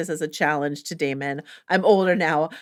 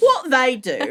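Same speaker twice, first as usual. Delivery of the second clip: put-on Cockney accent, pitched up; 6 semitones higher than usual. A speaker quotes Tom Bennett's line playing Ulf, in Tom Bennett's Cockney as Ulf. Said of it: "a Cockney".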